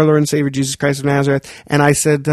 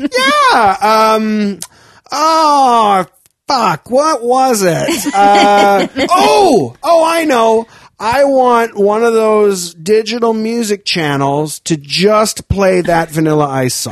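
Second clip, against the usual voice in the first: put-on drunk voice, slow rambling, lost for words; 6 semitones higher than usual. Retelling a customer's request on a call: imitating a drunk caller. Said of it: "He was so drunk".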